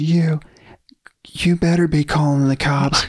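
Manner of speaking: acted-out hollering. Retelling a man yelling at the one on the phone: imitating someone yelling. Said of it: "he starts yelling at us".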